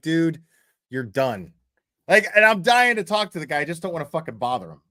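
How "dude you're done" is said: dismissive, brushing-off tone. Imitating AJ dismissing someone: imitating AJ dismissing someone. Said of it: "He's just like".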